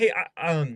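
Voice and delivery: nervous, halting stammer, tripping over each word. Imitating a new caller on a first cold call: imitating a stuttering caller. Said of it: "genuinely you're stuttering".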